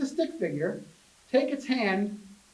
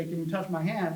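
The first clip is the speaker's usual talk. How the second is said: plain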